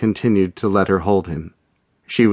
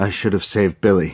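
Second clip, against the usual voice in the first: hoarse, rasping voice. Held in a woman's arms, a man speaks hoarsely. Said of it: "he said hoarsely".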